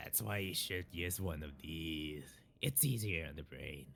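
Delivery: very low, soft, rumbling growl. Narrator reading Carl's line as he holds up a joint, growling Carl voice. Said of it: "you're kind of using the same like growl".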